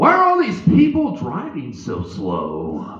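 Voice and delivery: spaced-out stoned drawl, slow, drawn out, stretched. Retelling a stoned family member driving in a funeral procession, imitating a stoned relative. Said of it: "he got a little too stoned".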